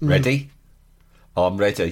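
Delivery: put-on low-pitched Birmingham Brummie accent. Recreating the other girl's opening exchange on the show, in a brummie accent. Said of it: "she had a Brummie accent. So it went like this".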